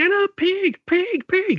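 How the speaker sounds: piercing, very high-pitched shrill screaming. Describing footage of a man beating someone up on the cage on TV, imitating him screaming. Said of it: "and he's just screaming".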